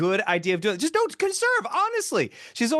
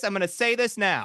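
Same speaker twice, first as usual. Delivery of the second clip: put-on blunt, unfiltered old woman voice. Imitating a grandma who speaks without a filter: imitating blunt grandma. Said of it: "She has no filter".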